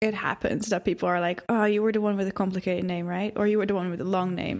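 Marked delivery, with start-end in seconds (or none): none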